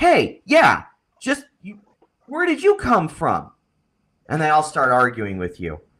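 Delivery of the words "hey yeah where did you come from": very high-pitched, swooping, yelled shout. Narrating a crowd arguing with you as someone else shouts: shouting. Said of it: "Someone else shouts".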